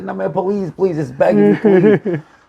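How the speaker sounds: high, tearful, desperate, crying voice. Retelling a cousin begging to leave a cold stadium: imitating a cousin crying and begging. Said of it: "he's just crying".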